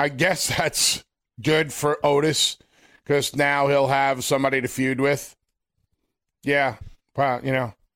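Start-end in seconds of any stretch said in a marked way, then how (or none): 0.0-5.4 sarcastic, unexcited, flat deadpan monotone. Reacting to a wrestler's return to the show: sarcastically unexcited. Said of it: "hear the excitement in my voice".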